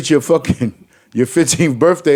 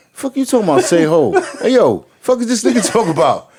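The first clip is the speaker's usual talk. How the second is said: pitched-up youngster voice with slang; 5 semitones higher than usual. Imitating young people reacting to an old party call: imitating young people. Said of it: "All the Y Ns be like this".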